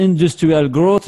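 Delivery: English accent, trying hard. French podcast intro naming the show: english accent. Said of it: "Je le dis avec mon meilleur accent anglais".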